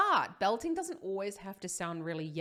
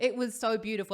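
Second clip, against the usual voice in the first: ordinary delivery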